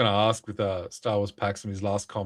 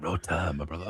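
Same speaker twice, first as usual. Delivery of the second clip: mock sultry, seductive whisper, soft murmur; 4 semitones lower, 7 dB quieter than usual. Speaker acts out a man's greeting to him, imitating a sultry whisper. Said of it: "he's a little sexual with it".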